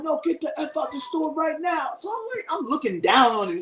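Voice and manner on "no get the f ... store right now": put-on, pitched-up security guard yell. Retelling a security guard ordering the speaker out of the store: imitating someone yelling. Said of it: "He starts yelling".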